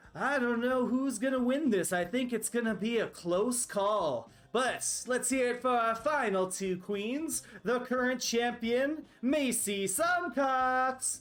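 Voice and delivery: high-pitched pageant host announcer voice. Voicing Daisy Chain announcing the final two queens: Daisy Chain announcing. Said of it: "and she says".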